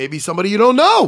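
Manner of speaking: loud high yell. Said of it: "Why am I yelling at you".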